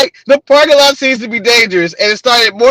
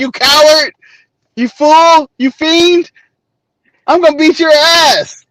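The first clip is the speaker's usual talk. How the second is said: mock furious, seething, held-in, wrestler-style delivery; 4 semitones higher than usual. Acting out a wrestler grabbing the microphone to call out a rival: imitating a furious wrestler challenge. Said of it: "Then I grab the microphone and be like".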